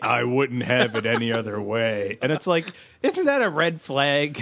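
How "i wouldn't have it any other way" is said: acted, really ominous, dark, foreboding delivery. Recapping a scene where a man speaks of the wedding, mock-ominous. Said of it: "he says really ominously".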